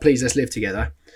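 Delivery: normal talking voice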